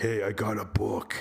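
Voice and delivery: big, hulking cartoon fairy-tale beast voice. Retelling a scene from a story; Beast voice. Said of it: "That's my Beast voice".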